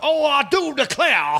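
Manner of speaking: hammy, exaggerated old-school cartoon Southern drawl, very high. Mocking how actors play Southerners on television, exaggerated cartoon Southern accent. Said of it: "stupid old school Yosemite Sam, Foghorn Leghorn Southern accents".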